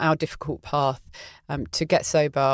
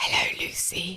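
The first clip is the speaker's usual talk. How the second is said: soft, hushed stage whisper; 4 semitones higher, 5 dB quieter than usual. Retelling a phone call, quoting the caller's greeting, whispering. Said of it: "Why are you whispering?".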